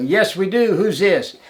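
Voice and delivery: high yelling, acted. Recounting calling across to another boat in the dark, retelling someone yelling back. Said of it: "And somebody yelled".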